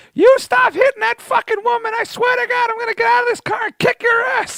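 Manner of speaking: put-on very high, shrill, screeching old-lady scream. Retelling two old ladies in a car yelling at him: imitating screaming old ladies. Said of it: "honking and screaming".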